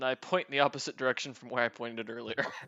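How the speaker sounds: ordinary delivery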